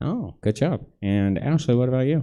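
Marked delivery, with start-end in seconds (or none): 0.0-0.8 amazed, surprised announcer voice full of praise. Quiz host reacts to a contestant's right answer: surprised announcer voice. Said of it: "sounded surprised that I got it right".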